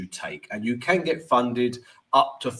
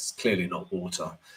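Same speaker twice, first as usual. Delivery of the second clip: normal talking voice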